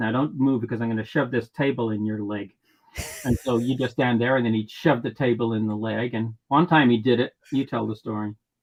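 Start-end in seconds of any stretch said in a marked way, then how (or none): 0.0-2.5 mock muttering under breath, lower and quieter. Retelling what the stage manager said while doing something else: imitating someone muttering under breath. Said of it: "he'd say under his breath".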